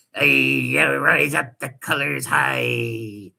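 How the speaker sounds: creaky, drawn-out, slow, rough pirate voice. Mocking a speaker on a stream by imitating him: mock pirate voice. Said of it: "He's like a pirate".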